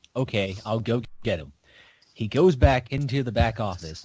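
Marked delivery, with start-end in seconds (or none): 0.2-1.6 mock cool, unbothered, very calm and easy. Retelling how a manager answered a customer demanding the manager, imitating a calm reply. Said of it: "he says very calmly".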